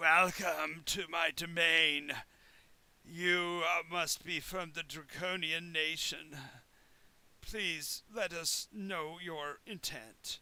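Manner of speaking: horrible croaking voice, slow, guttural, greasy. A creature expected to sound beautiful speaks: croaky, guttural, greasy voice. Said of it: "croaks this horrible, guttural, kind of greasy sound".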